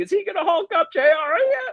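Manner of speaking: shrill, very high-pitched, loud screaming. Retelling a wrestling match moment, imitating the King screaming. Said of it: "the King starts screaming".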